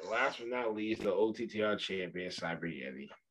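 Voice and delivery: sad-sounding, quiet delivery. Announcing the champion's name to the others, sounding sad. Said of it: "it sounded so sad when you say that".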